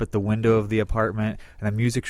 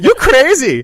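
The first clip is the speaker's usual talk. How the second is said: put-on Swedish accent, shrill, very high, very loud; 12 dB louder than usual. Imitating the man in a commercial while discussing it with others, a Swedish impression from the IKEA commercial. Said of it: "Is that your Swedish impression?".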